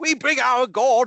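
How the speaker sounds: very slow, high, plummy posh English accent. Mocking how people in films always talk, posh English accent. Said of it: "they have very posh English accents in, in films".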